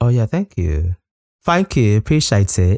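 fairly convincing, put-on English accent. Thanking the other speaker after the playlist mention, in a put-on english accent. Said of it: "You do quite a good English accent there".

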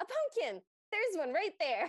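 put-on delighted, eager kid's cry, high and swooping. Retelling a child's line in a home video: imitating a child yelling excitedly. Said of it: "So she yells".

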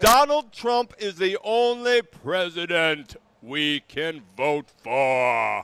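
slow pronouncement, "for" drawn out. Asked by another speaker to do a Sebastian Gorka impression. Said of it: "that's very good".

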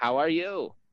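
high, robotic machine computer voice. Narrating a game scene, the speaker voices the computer: computer voice. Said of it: "Computer voice".

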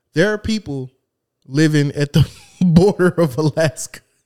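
talking through laughter. Joking with another speaker about Alaska, laughing while talking. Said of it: "Why are you laughing, man?".

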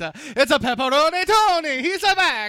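very high, very loud, bad fake German accent. After being urged to try it, the speaker shows off a german accent. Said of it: "This is my German accent".

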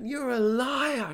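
shrieking, screamed, very high pitch. Speaker retells a woman's reply when he asked for his phone back, imitating her screaming. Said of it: "She screams at me".

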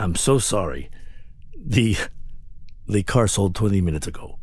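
strong put-on Latin accent. A dealership salesman apologizes to a customer that the car he came to see was already sold, in a heavy Latin accent. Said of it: "With the heavy Latin accent".

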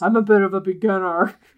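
faked, put-on man's voice. A masked woman in a story passing as a man, put-on man's voice. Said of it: "She's doing a man voice".

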